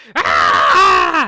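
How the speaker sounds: very loud screech of a small creature. Voicing a small gray creature jumping out at a fox: loud creature scream. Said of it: "the loud scream of a small, gray-looking creature".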